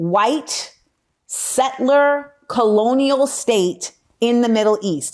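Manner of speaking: slow, deliberate, each word spaced out with emphasis. Addressing listeners and wanting them to catch this phrase, said slowly on purpose. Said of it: "I said it slow".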